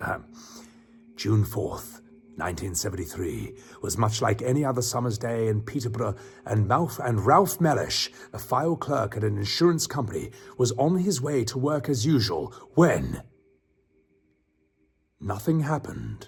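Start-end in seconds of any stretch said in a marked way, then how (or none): 1.2-16.3 spooky, scary ghost-tale narrating voice. Streamer reading a story aloud to chat, in a scary storytelling voice. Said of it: "I should do the scary voice for this".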